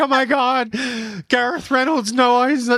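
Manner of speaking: starstruck, thrilled, high, loud gushing fan voice.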